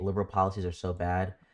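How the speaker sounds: normal talking voice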